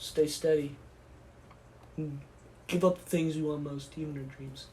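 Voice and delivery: low, soft, solemn heroic speech delivery.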